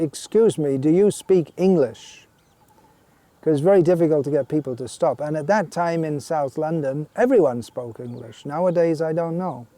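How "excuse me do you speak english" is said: firm, strong, slow calling voice. Retelling how a man called out to passers-by in South London, in a strong voice. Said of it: "in a strong voice".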